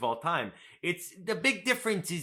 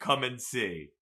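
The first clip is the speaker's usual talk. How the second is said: ordinary talk, nothing marked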